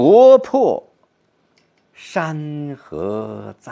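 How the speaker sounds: 国破 loud and high, 山河在 very slow, aching.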